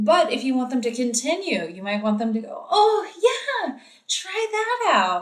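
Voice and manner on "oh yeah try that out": very high, animated, swooping, drawn-out sing-song inflection. Explaining how to encourage infants, demonstrating a high-pitched inflected voice. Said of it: "I'm using my high pitch inflection".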